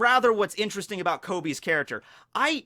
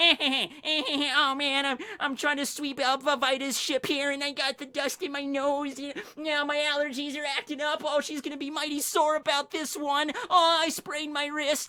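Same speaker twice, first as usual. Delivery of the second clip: high-pitched, nerdy put-on voice; 6 semitones higher than usual. Describing Kobe's character at the very beginning, the speaker mimics him in a nerdy high-pitched voice. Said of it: "the nerdy voice, the high pitched, kind of like Mandark voice".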